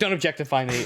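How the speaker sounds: ordinary delivery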